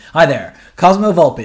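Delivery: loud, pompous, self-important voice. Imitating someone annoying who introduces himself by full name: imitating an annoying man. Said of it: "they'll always introduce themselves full name".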